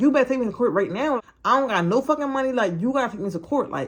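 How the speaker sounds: mock snapping, high, angry cursing tirade. Retelling snapping at the foster mom about court: imitating own angry snapping. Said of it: "I'm probably cursing at this lady".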